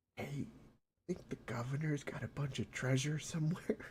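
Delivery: very hushed, secretive, leaning-in whisper. As Harambe, leaning over to Spencer with a question: whispering in Spencer's ear. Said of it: "lean over and whisper in Spencer's ear".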